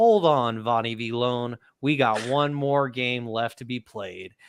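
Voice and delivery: ordinary talk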